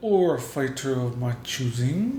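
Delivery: quiet, slowed slipped-in line. Retelling how Shang Tsung adds a rule: imitating Shang Tsung saying it low. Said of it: "he says it so low".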